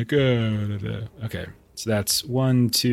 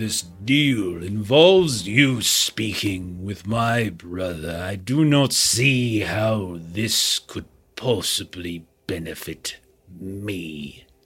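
stern, very slow character voice, "me" drawn out; 2 semitones lower than usual. Voicing a stern leader who looks down at the player: stern character voice. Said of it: "the main guy seems stern".

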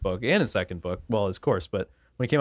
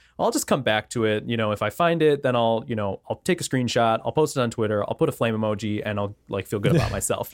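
ordinary talk, nothing marked

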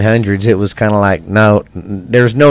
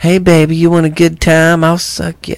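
put-on ghostly woman voice, higher pitch; 7 semitones higher than usual. Imagining a ghost woman offering the guys a good time: put-on ghost woman voice. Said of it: "could you imagine a ghost woman sitting there going".

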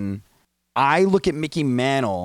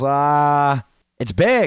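mock dry sarcastic tone with a drawn-out "ah"; 3 semitones higher, 4 dB louder than usual. Retelling an interview answer given with a sarcastic smile: imitating Derek Jeter, sarcastic. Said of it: "he literally cracks a sarcastic smile and he goes".

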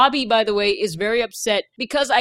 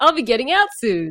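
put-on happy character voice. Retelling a movie scene, voicing Ernest after the warden leaves, imitating Ernest sounding happy. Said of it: "Ernest is really happy".

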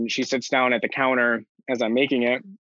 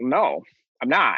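very confident, flat, blunt delivery. Retelling an answer given while stirring sloppy joes: imitating a confident denial. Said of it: "very confidently".

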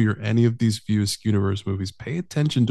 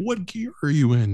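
mock screaming, high-pitched; 6 semitones higher than usual. Retelling a movie scene where a passenger screams from the back: imitating someone screaming. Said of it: "she's screaming from the back".

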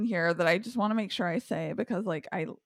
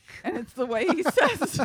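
normal talking voice

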